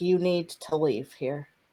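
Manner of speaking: soft, growled beast voice with a huff. A creature growls at the player to leave, growling creature. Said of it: "It growls at you again and lets out this like huff".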